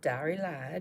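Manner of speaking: southern American accent with a drawl. Naming a color called dairy lad: southern accent on dairy lad. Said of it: "it always sounds better when you say it with a southern accent".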